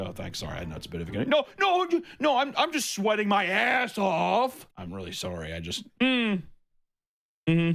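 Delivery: high voice with swooping pitch. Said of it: "Guy's no legs. He's like".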